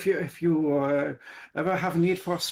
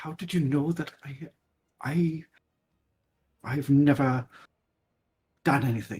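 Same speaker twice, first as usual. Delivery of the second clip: hushed whisper in a put-on character voice; 3 semitones lower than usual. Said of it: "he's going to try to whisper it".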